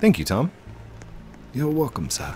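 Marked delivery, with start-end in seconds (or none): 1.5-2.3 put-on soft, quiet, older butler voice. Voicing Tom replying after being thanked, Tom's older butler voice. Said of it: "It's more like a butler sound".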